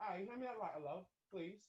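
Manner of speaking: put-on British accent. Joking about doing the interview in a British accent: put-on British accent. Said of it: "only gonna do interviews in a British accent".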